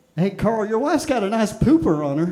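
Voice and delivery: put-on loud, boozy drunk dad voice. Imitating the kind of dad who shows up drunk at T-ball, put-on dad voice. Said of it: "That was an impression of my dad".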